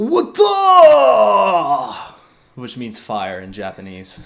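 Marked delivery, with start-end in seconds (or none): 0.0-2.6 very high, very loud, swooping, drawn-out yell. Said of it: "here's my Erwin impression".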